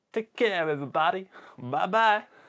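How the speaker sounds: weird put-on American accent. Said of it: "that weird American accent".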